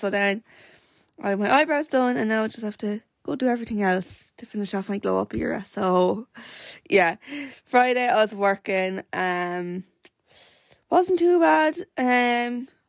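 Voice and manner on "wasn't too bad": light, breezy tone. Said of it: "well, it wasn't too bad".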